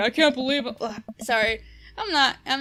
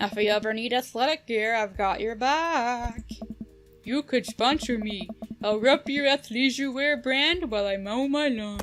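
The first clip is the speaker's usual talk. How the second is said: put-on dopey dumb jock voice, ending drawn out. Voicing a male character's lines in a scene, dumb bro jock voice. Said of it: "give him like this like dumb bro jock voice".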